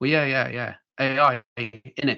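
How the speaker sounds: put-on Mancunian accent. Retelling a candidate's answer on a phone screen: imitating a Mancunian accent. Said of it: "in a very Mancunian accent".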